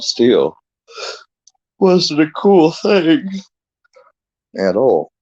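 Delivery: very high, halting speech through a yawn. Just woke up, commenting on an online feud over a friend, yawning. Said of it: "Sorry, I'm yawning".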